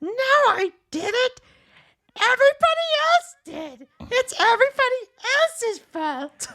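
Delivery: shrill, screeching cartoon villain voice, pitch swinging all over. Retelling a cartoon scene to another speaker, in a Cobra Commander voice. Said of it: "My impression of, of Cobra Commander is really bad".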